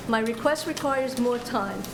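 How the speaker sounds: normal talking voice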